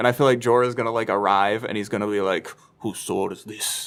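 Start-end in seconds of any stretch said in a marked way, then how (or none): 2.8-3.9 hushed, soft, breathy, breathed-out delivery. Acting out a guessed scene: Jorah impression. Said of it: "That's actually a pretty good Jorah impression".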